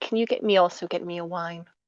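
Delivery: quiet, soft half-whispered aside. Voicing a character asking the maid for a wine: half-whispering. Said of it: "kinda whispers to the maid".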